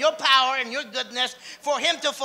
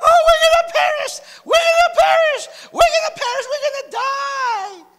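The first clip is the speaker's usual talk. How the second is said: put-on frightened, very high, loud, panicked children's screaming; 8 dB louder than usual. Retelling the disciples in the boat with Jesus, mimicking their panicked screaming. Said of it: "they're all screaming like little kids".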